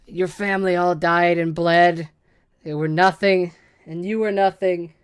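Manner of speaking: very loud, booming giant spider monster voice. A game master voices a spider creature speaking to a player; spider creature voice. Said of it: "She looks at you with her big spidery face and she speaks".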